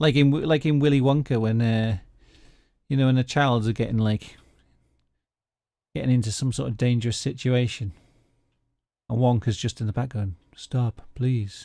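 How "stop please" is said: put-on sarcastic voice. Describing the film scene where the children are in danger, imitating sarcastic Willy Wonka. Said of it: "in a really sar- sarcastic voice".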